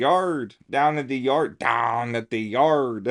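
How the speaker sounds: deliberate put-on Western Pennsylvania accent, loud and slow. Showing a put-on way of talking: Western Pennsylvania accent. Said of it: "trying to have the Western P accent".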